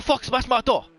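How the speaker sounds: high-pitched ranting voice with mock Chinese accent.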